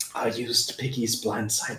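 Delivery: hushed half-whisper in a put-on character voice. Half-whispering back to another character in the game: half-whispering in character. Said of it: "I whisper back".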